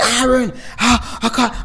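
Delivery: play-acted, held-back, mild, drawn-out yell. Retelling a phone call where she screamed after a car crash, imitating her screaming. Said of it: "she's screaming down the phone".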